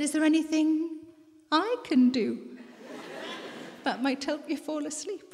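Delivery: mock teasing, come-hither coquettish tone. Retelling a late night in bed, asking her sleepless husband something in a coquettish voice. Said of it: "in my most coquettish voice".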